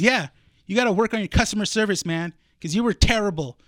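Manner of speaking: put-on aggressive voice. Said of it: "He's all aggressive already".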